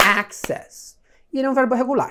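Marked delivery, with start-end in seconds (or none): 0.0-1.0 access with stress on the first syllable ac-. Lesson on english verb pronunciation: stress on first syllable of access. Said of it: "a tônica desse verbo é na primeira sílaba".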